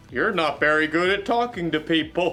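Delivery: put-on stuffed bear voice. One of the voices in the speaker's head speaks to them, in a teddy bear voice. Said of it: "Teddy Bear Voice".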